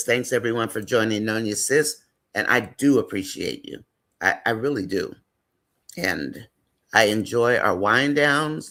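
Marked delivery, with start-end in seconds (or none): none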